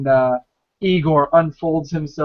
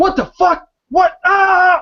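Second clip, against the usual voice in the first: very high, drawn-out, terrified, panicked screams; 5 dB louder than usual. Voicing people in a warehouse as blaster fire starts: people screaming in panic. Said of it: "people are screaming like".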